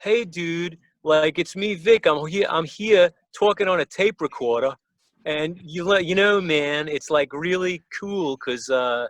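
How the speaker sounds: partial fake Californian accent. Retelling talking on a tape recorder: weak put-on california accent. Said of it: "about one-tenth of the California accent".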